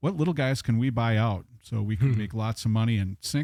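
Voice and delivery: ordinary talk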